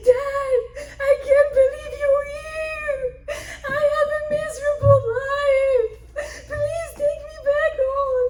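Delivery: high, loud, tearful sobbing and crying.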